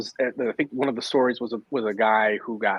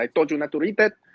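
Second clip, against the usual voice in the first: put-on thick Filipino accent, spoken faster; 5 semitones higher than usual. Recalling a childhood story, quoting the mother in a thick Filipino accent. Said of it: "in her thick Filipino accent said".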